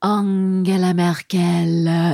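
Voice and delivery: put-on sexy French accent, low and sultry, stretched word. Speakers trying to make a politician's name sound sexier, sexy french accent. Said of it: "I'm doing it in a French accent".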